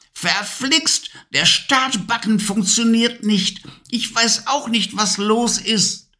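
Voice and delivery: furious, very high-pitched angry yell. The witch can't get the broom to start, shouting angrily. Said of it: "schrie wütend".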